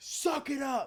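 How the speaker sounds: drawn-out high yelling. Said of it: "him screaming at me".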